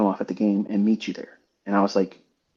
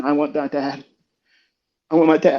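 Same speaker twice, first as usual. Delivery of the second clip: mock small child's high, desperate scream; 5 semitones higher than usual. Recounting a phone call, voicing his youngest son in the back seat: retelling a child screaming. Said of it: "He's screaming".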